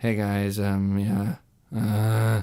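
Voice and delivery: dull, flat, very slow monotone drone. Showing how their voice sounds talking to camera: imitating own monotone voice. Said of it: "just super monotone and boring".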